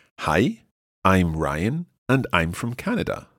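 careful, unhurried, slightly slowed reading. Reading aloud what Ryan said so learners can analyze it, slightly slower reading. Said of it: "pero en versión un poco más lenta".

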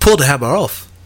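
put-on New Zealand accent, done for fun. Trading celebrity impressions in conversation, Taika Waititi New Zealand accent. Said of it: "That's my Taika Waititi".

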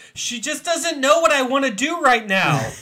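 very high-pitched, very loud screaming outburst. Speaker recalls reading a book and screaming at it: retelling screaming at a book. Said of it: "I ended up screaming at the book".

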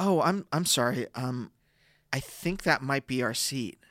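hushed, soft, sweet, gentle, unthreatening voice. Retelling telling the person in their seat it's theirs: soft voice. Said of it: "my soft voice".

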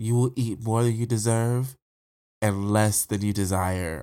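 mock creepy delivery. Retelling a movie character leaning down to one guy, imitating a creepy line. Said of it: "it was done really creepily".

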